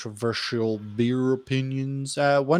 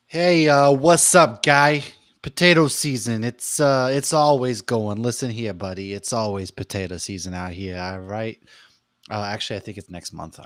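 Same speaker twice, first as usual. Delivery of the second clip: louder put-on Massachusetts accent; 5 dB louder than usual. Answering a question about potato season: put-on Massachusetts accent. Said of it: "Is that what Idaho people sound like?".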